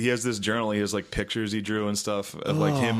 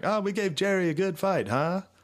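put-on very high, breezy British woman's accent; 10 semitones higher than usual. Retelling what a british soldier in a game says: imitating a british woman. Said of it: "this British chick who's got".

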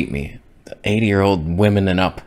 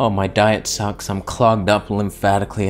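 ordinary talk, nothing marked

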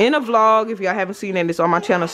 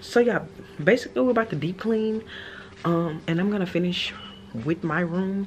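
hushed whisper, quieter; 7 dB quieter than usual. Vlogging while whispering in their own house, whispering. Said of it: "it's sad that I'm whispering in my own house".

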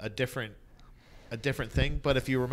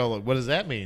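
plain

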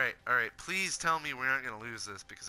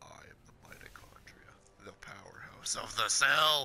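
huge, declaiming, big booming voice. Imagining what he would say after throwing the speaker onto the bed, big booming voice. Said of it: "say in his big, booming voice".

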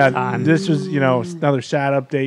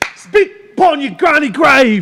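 very high-pitched, loud, tough voice, belted out; 12 semitones higher, 6 dB louder than usual. Repeating a friend's insult line as a Jason Statham remix. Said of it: "a little bit of a Jason Statham remix there".

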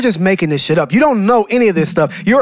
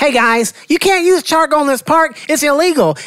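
woman's voice, plain and higher-pitched; 6 semitones higher than usual. Retelling a park encounter, the speaker voices the woman who came over: imitating the woman. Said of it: "That's how she sounded".

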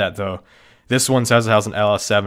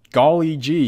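deadpan, robotic sarcastic cheer, pitched up; 5 semitones higher than usual. Reviewing a car's claimed Toyota Camry V6 engine, robotic sarcastic tone. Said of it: "obviously I'm trying to sound robotic and sarcastic".

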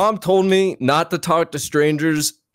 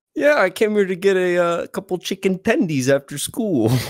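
put-on little boy voice, much higher; 5 semitones higher than usual. Answering a man who greeted them as little boy: little boy voice. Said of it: "The voice is too f***ing good".

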